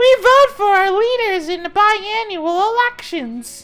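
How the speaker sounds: very high little voice. Voicing the people of the city speaking up to their king, tiny voice. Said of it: "The tiny voice from the city says".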